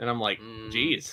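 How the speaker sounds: ordinary delivery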